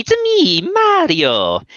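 very high, loud cartoon voice, pitch swinging. Demonstrating the impression they do for someone who loves Mario, Mario impression. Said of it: "I also do a Mario impression".

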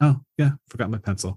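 offhand, unbothered, nonchalant throwaway delivery. Retelling a film scene, quoting Bender: imitating Bender's nonchalant line. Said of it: "It's just so nonchalant".

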